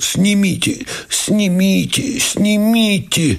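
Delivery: put-on very high, hoarse, wheezing pained groan. A narrator reads a lieutenant collapsing and pointing at his socks, wheezing groan. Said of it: "Сипя и корчес повалился и, тыча пальцами в носки, простонал".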